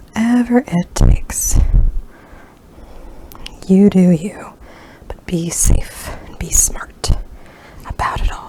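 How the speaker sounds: hushed whisper. Speaker addresses the audience while whispering. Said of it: "I am whispering at this time".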